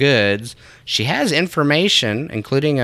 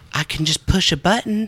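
overly polite put-on Southern housewife accent, pitched up; 6 semitones higher than usual. Retelling a stepmom offering coffee: imitating a Southern, polite housewife. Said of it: "She was all acting all Southern and".

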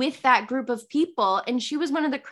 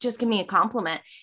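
usual speaking voice

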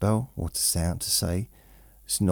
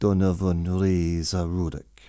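bad put-on Jamaican accent, slower; 3 dB louder than usual. Repeating a full name to show how it was said: put-on Jamaican accent. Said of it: "That's my Jamaican accent".

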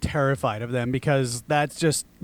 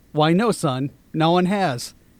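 usual speaking voice

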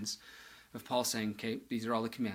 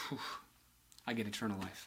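put-on sigh of relief, lower and quieter; 3 semitones lower, 9 dB quieter than usual. Speaker voicing the rich young ruler after he answers the teacher, acting the rich young ruler's relief. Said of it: "You can hear his relief going".

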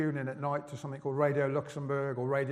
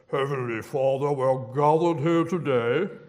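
booming, drawn-out, very loud slow voice; 9 dB louder than usual. Recalling church services, imitating someone in a put-on strange prayer voice. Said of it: "put on a different voice and say".

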